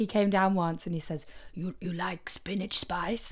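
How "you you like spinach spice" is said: mock thick Greek accent, quieter. Retelling what a neighbor upstairs asked: imitating a thick Greek accent. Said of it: "He has a very thick Greek accent".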